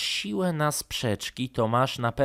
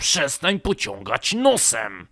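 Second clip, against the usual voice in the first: loud, snarling, growled delivery; 4 semitones higher, 5 dB louder than usual. Narrator reads one boy's retort to another on the sofa: growled. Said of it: "warknął Karolek".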